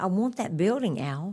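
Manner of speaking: ordinary talk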